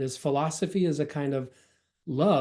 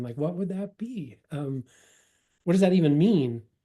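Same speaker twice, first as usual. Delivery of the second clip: normal talking voice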